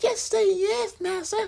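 very high, thin, soft little voice. Show how the actress always spoke as a maid in Gone with the Wind, high Butterfly McQueen voice. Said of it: "she would always speak like this".

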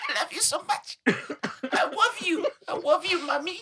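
put-on very high, slow, drawn-out baby talk. Imagining breaking into it during a serious moment: baby voice. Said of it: "bust out the baby voice saying".

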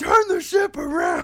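very high, loud yell. Recalling Dan's speech, re-enacting someone who suddenly starts shouting. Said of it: "he just starts shouting".

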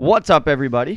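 loud booming voice. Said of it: "that was loud".

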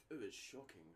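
botched, failed attempt at a British accent. Trying a teacher's british accent: failed british accent. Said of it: "I can't do his accent".

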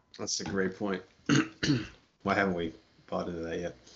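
dry, insincere, sarcastic, unconvinced tone. Answering someone who claims he's been saying it for years, in a sarcastic tone. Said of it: "You kind of sounded sarcastic when you said that".

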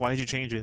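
put-on disdainful tone. Retelling a movie character's question about a book: imitating disdain. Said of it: "with such a, like, disdain".

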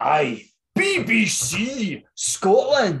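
slow, drawn-out, bad mock Scottish accent.

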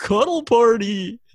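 very loud, high blurted outburst. Retelling what they blurted out on seeing the dogs: imitating own loud shout. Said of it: "I said it very loud".

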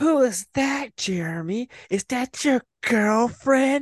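put-on shrill yell, very high-pitched and loud. Jeremy recounts a neighborhood girl yelling to him across the street, imitating a girl yelling. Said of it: "she yells from across the street".

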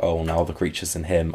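plain

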